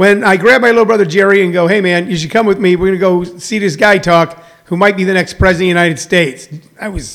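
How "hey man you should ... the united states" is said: plain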